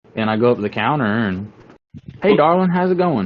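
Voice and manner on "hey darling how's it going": very high, folksy put-on country accent. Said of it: "hit a country store on some back roads exit".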